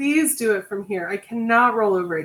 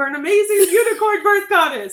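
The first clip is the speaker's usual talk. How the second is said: loud, booming, beaming, proud delivery; 9 semitones higher, 4 dB louder than usual. Quoting a man's answer to her question, retelling it loud and proud. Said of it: "he said it real loud and proud".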